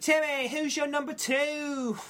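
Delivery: high, fake English accent, "two" drawn out. Speaker asks Timmy for his number two pick in a put-on English accent. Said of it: "That's my English accent".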